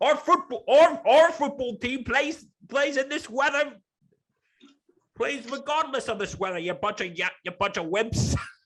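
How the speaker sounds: bad fake British accent, pitched very high. Speaking as a British voice about football, in a terrible British accent. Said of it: "sorry about my terrible British accent".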